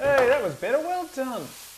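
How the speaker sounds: high, loud, sweet patronising voice.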